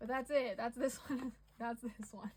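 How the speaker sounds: speaking through laughter. Wrapping up a piece they wrote, laughing while talking. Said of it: "Sorry, I'm still laughing at this".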